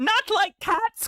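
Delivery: very high, shrill, impassioned mouse-like squeak. Narrator reading the story voices the mouse answering Alice, in a shrill, passionate mouse voice. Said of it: "cried the mouse in a shrill, passionate voice".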